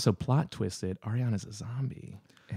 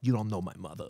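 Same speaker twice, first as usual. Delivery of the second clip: put-on Long Island accent, spoken quieter; 5 dB quieter than usual. Acting out the end of an imagined training montage: proper Long Island accent. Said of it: "the proper accent of".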